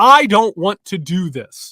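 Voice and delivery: very loud frustrated outburst. Explaining a technique learned in therapy, the speaker demonstrates it in a frustrated voice. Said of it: "say out loud in a frustrated voice".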